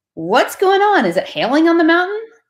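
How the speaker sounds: playful, quick, joking tone, pitched way up. Answering a phone call from Sean, repeating their own words; retelling a joking greeting. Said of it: "I jokingly pick up the phone and say".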